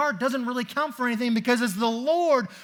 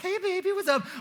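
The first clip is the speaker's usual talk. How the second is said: put-on high baby-talk voice; 7 semitones higher than usual. Showing how the voice changes when talking to babies: voice for talking to babies. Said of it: "my voice changes when I talk to babies".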